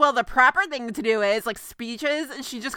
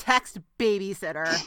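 put-on begrudging voice, lower and quieter; 5 semitones lower, 4 dB quieter than usual. Retelling how the car's voice reads back a text command, mock-begrudging car voice. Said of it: "very begrudgingly moves along. You can even hear it in her voice".

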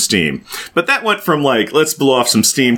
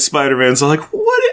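ordinary talk

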